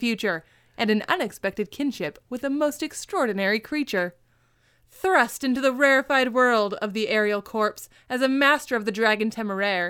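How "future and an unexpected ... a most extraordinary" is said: plain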